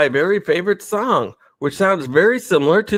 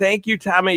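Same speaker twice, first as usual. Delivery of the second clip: plain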